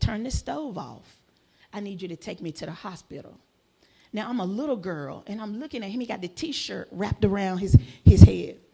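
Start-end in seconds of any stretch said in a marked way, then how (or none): 0.0-3.4 mock, calmly spoken voice. Speaker retells what he said at the table when she was a little girl, imitating a calm voice. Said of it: "in a calm voice".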